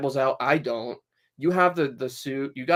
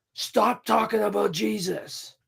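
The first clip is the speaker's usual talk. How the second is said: mock drunken threatening man voice, higher pitch; 7 semitones higher than usual. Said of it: "threatening me".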